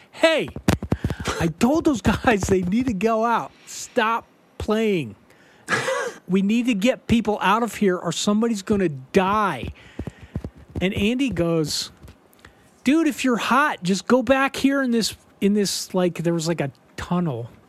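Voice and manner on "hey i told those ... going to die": mild, half-shouted yell. Recounting the songs still playing, the speaker retells yelling at them. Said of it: "I'm yelling at them".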